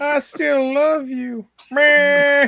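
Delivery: high, slow, crying voice. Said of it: "best cry ever video on YouTube".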